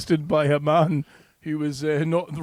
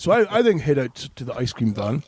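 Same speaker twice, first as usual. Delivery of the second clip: plain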